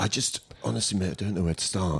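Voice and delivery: timid, shy, soft, rushed voice. Acting a nervous newbie customer asking a baker for bread: timid newbie customer. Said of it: "you look a bit timid".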